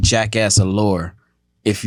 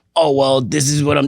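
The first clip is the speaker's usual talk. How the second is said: put-on raspy celebrity voice, higher pitched; 4 semitones higher than usual. Describing how a celebrity talks now: Steve-O impersonation. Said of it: "that was my Steve-O impersonation".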